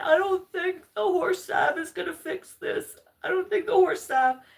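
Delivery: very high, weepy, sobbing crying voice. Retelling being carried home with an injured foot: imitating own past crying. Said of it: "I was crying, saying".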